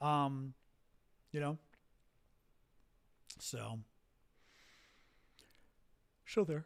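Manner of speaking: words muffled while yawning. Talking to viewers during the show, yawning. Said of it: "I'm yawning tonight".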